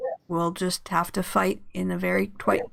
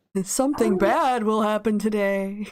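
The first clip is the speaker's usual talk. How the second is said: slow, gloomy, pessimistic, doom-saying voice. Voicing a talking war hammer's warning: pessimistic war hammer voice. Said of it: "it says it in that exact voice".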